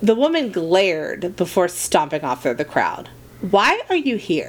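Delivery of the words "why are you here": put-on unfazed calm, pitched slightly higher. Santa asks Krampus, trying to sound unfazed. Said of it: "trying to act unfazed".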